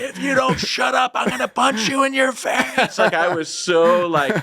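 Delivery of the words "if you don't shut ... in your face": mock very high, shrill scream at top of lungs. Retelling what was screamed at someone on a ride: retelling a scream at top of lungs. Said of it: "I screamed at the top of my lungs".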